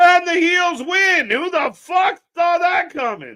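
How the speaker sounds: high, loud, shocked shouting in disbelief.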